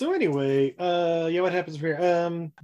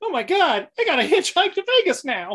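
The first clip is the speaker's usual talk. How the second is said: very high, loud, swooping exclamation; 11 semitones higher, 5 dB louder than usual. Retelling a scene where a character must hitchhike: Mark Hamill voice. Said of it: "my excellent Mark Hamill voice".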